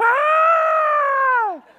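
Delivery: put-on very high, loud girlish scream. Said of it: "starts screaming like a girl".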